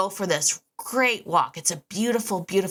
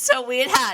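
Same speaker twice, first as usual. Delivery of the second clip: high voice, laughing through the words; 8 semitones higher, 5 dB louder than usual. Picking the story back up after a pause, laughing while talking. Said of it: "and I'm laughing".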